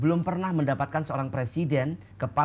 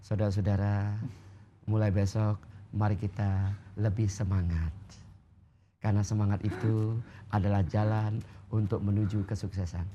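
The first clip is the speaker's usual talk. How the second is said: limp, powerless, flat monotone with no energy; 6 semitones lower, 3 dB quieter than usual. Showing a meeting pep talk said without power: limp, without power. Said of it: "mengatakannya dengan tanpa power".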